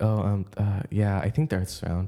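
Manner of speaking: unconfident, not confident delivery. Showing the first of two ways of talking, unconfident delivery. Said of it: "that didn't sound confident at all".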